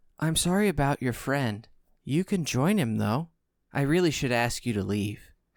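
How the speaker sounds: softest, kindest, gentle whisper. A voice speaks to the players, in a soft kind whisper. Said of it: "the softest, most whispering, kindest voice".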